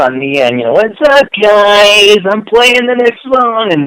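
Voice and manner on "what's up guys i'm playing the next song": very high, shrill, loud, grating DJ voice, "guys" drawn out. Retelling a radio producer's on-air line, imitating Pat's annoying voice. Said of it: "I just remember his annoying voice".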